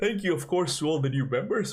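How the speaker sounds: talking through a yawn. Thanking new members at the end of a stream, yawning while talking. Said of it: "I'm yawning".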